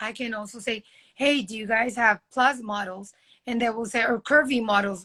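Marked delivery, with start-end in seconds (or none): none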